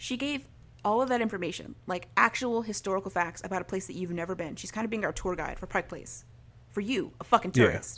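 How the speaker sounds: normal talking voice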